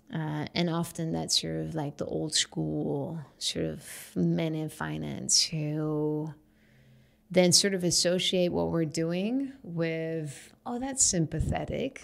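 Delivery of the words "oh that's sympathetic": higher-pitched patronizing, condescending tone. Mimicking old-school finance men reacting to her work, in a mock condescending tone. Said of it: "The lovely condescending tone".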